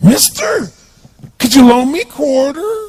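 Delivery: put-on bizarre voice. Retelling what a man who got close to him said, imitating a bizarre voice. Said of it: "He had this really bizarre looking sounding voice".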